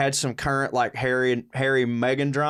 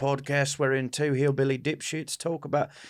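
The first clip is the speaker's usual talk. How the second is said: slipping into Australian accent; 4 dB quieter than usual. Podcast co-host introducing the show, slipping into australian accent. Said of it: "And I went Australian there".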